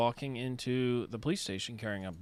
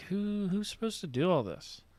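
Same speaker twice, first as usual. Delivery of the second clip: high, offhand musing, voice raised slightly; 7 semitones higher than usual. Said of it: "just talking real softly".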